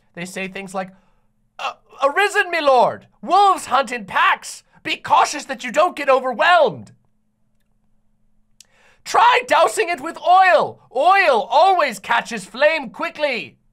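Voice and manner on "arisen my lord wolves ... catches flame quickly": put-on archaic English voice, higher and louder. Imitating how the game's characters talk: fake Old English game dialogue. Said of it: "that's basically how all of the characters in the game talk".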